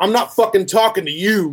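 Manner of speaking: put-on sudden, high, aggressive, hostile outburst. Retelling a guy's reply after being asked about a mask: imitating a man screaming. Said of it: "He instantly starts screaming at me".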